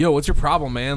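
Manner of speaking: ordinary delivery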